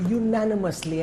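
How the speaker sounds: firm, hard emphasis on unanimously.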